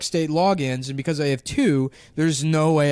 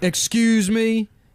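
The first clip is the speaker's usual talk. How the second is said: acted, sassy clerk voice, pitched up; 7 semitones higher than usual. Retelling how a state phone clerk answered after a long hold: imitating a sassy phone clerk. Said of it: "He's sassy?".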